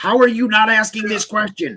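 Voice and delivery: mock, very high, shrieking, frustrated exasperated scream. Retelling watching an interviewer skip questions, yelling at the screen: retelling screaming at screen. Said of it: "I'm screaming into the fucking screen".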